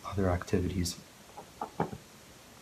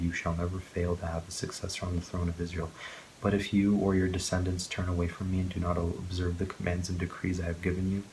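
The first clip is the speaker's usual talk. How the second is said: ordinary delivery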